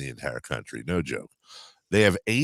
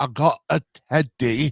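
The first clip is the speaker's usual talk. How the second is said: put-on high, slow baby voice with Scottish accent; 9 semitones higher, 3 dB louder than usual. Retelling a video of babies with scottish accents: imitating a baby's scottish accent. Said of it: "babies with Scottish accents".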